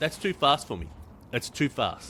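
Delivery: ordinary delivery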